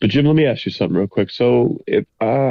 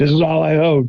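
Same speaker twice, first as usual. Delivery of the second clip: playful, pretend, high-pitched fake scream; 6 semitones higher than usual. Acting out a joke bit at the bar about losing everything: pretend screaming. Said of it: "I'll just be screaming".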